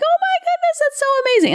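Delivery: very high, squealy, annoying, excited gush. Speaker acts out how their voice sounds to their kids, imitating own high-pitched voice. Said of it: "get all high pitched and like".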